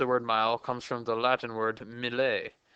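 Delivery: mock French pronunciation. Explaining where a word comes from to listeners, saying it in a french accent. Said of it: "I said that with a French accent".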